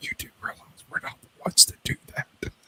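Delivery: hushed, soft, close whisper. Retelling what the seventeen-year-old daughter whispered in the ear: imitating someone whispering. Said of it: "whispers in my ear".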